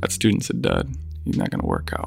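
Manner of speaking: put-on muttering under breath. Retelling what a teacher said during the lottery: imitating muttering under his breath. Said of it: "under his breath say".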